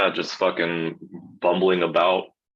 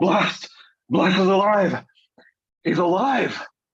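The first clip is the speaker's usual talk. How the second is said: breathless, huffing and panting, higher; 13 semitones higher than usual. Playing a character arriving at a run: out of breath, huffing. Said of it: "out of breath and I'm, like, huffing".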